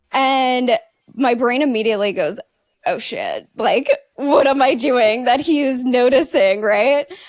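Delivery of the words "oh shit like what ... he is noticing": mock rising, alarmed, panicked inner voice. Retelling a moment of sudden worry: retelling own panicked thought. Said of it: "I immediately go, like, panic mode".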